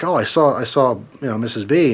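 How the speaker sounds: usual speaking voice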